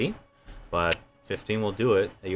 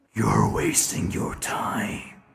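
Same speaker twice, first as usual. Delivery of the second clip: deep voice whispering. A voice in a character's head speaks to him at a ritual site; deep voice in the head. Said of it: "A deep voice".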